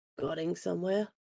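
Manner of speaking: creepy, very soft low voice. Reaching the top of the stairs, she addresses him: creepy Frey voice, octave lower. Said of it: "she dons her little creepy Frey voice and her and just like that little little drop down in the octave".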